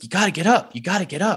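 very high, loud yelling. Retelling urging a collapsed climber to get up: retelling own yelling. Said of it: "I'm yelling in her ear".

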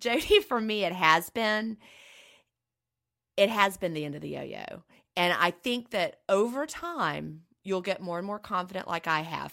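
choked-up, emotional voice, voice catching. Speaker addresses Jody about their own experience, choking up. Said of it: "I'm choking up".

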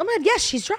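exasperated mocking delivery. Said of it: "I was like".

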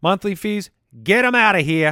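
slight New York accent. Reading a sponsor ad for a checking app, in a slight New York accent. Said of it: "That was a little bit of a New York accent".

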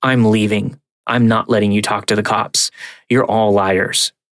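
ordinary delivery

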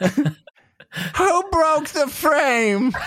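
put-on loud, very high old woman voice. Joking on the show after a frame break, repeating the question: grandma voice. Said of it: "Grandma voice unlocked".

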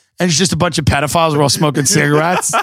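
ordinary talk

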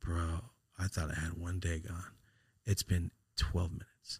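soft, beaten, deflated, defeated voice. Retelling what a man said, imitating a defeated voice. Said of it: "Like you can hear him, like just defeated".

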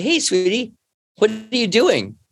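high, sing-song, gentle, kindly dad voice. A father retells speaking to his daughter staring out the window, putting on nice dad voice. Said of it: "I put on my nice dad voice".

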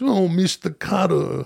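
rough, creaky macho man voice, sketch-comedy style. Showing the other speaker a comedian's John Travolta Macho Man voice. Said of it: "where he's always talking like this".

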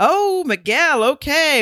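very high, excited, shrieking scream. Retelling what someone screamed as Lindy walked down the aisle: imitating a scream.

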